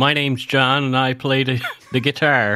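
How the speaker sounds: accent of Liverpool, Canada. Repeating a line on request in a put-on accent: liverpool, canada accent. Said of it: "with a Liverpool, uh, Canada accent".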